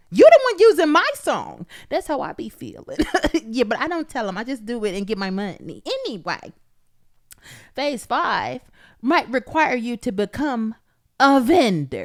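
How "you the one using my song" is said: high, loud, fed-up, exasperated voice. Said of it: "be like".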